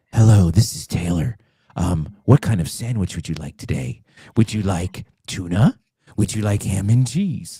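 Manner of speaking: mock sexy, sultry phone-line voice. Pretending to answer a call on her made-up phone line, in a sexy phone line voice. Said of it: "my sex line voice is scaring him".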